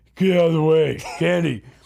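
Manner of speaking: loud, half-dead, dismissive zombie-mode voice. Retelling what Jay says coming out for candy: imitating Jay in zombie mode. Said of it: "he's in zombie mode".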